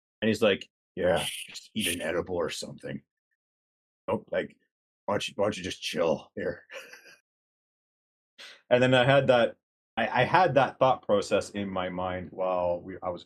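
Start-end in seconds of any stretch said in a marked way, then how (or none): 1.0-6.6 gruff but totally relaxed parody voice. Retelling lines of a parody character he voiced: relaxed gruff Batman voice. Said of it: "he speaks in that voice, and it's a bit more relaxed, but it's still gruff".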